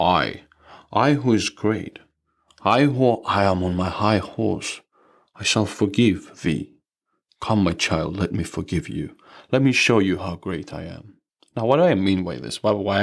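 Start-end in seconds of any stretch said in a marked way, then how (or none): 0.0-11.1 sarcastic mock-grand lofty voice, slower. Speaking on forgiveness, acting out a self-important forgiver, mock-grandiose and sarcastic. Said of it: "I'm being sarcastic".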